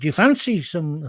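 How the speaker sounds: slow, casual put-on Scottish accent. Retelling what an alcoholic man said to him one day: imitating a scottish accent. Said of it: "when did he become Scottish?".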